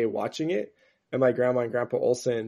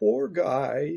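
put-on very sweet, high, creaky little old lady voice; 5 semitones higher than usual. Retelling grandma's reaction to a movie scene: imitating a sweet old lady. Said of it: "she just said in this, like, very, like, sweet old lady way".

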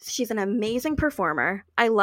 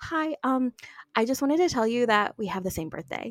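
whispering, slowed down; 2 semitones higher than usual. Retelling approaching someone in a quiet room where everyone listened: retelling a whisper. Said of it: "I was like whispering".

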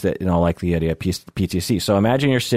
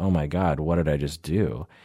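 ashamed-sounding, lower and quieter voice; 4 semitones lower, 6 dB quieter than usual. Retelling how the driver reacted after being yelled at: imitating someone ashamed. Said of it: "was now totally ashamed of what".

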